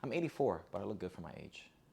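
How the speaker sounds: ironic, sarcastic delivery. Showing how to answer a question about age: sarcastic reply.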